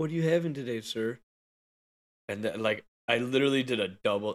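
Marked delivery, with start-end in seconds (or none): 0.0-1.2 put-on sweet, girlish voice of a young girl. Retelling how the person holding the card reader spoke, in a sweet girl's voice. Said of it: "just like a sweet girl's voice".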